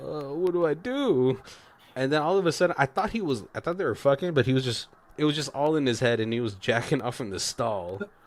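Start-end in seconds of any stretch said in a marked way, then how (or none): 0.0-1.4 high, slow, totally flabbergasted voice. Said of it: "kinda flabbergasted".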